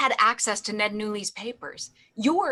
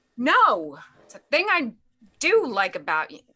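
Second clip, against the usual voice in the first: loud full-on shouting yell; 3 dB louder than usual. In a drama scene, replying to a question mid-argument, yelling. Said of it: "Why do you yell at me".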